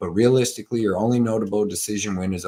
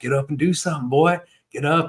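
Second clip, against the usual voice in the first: put-on pitched-up Southern country accent from Tennessee; 7 semitones higher than usual. Retelling what Pierce said to Brito on the ground: Pierce's country accent. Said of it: "he sounds so fucking country 'cause he's from Tennessee".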